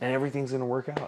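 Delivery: super relaxed, laid-back, easy delivery. Retelling advice from a friend named John: imitating John's super laid-back way. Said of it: "in his, like, super laid back way".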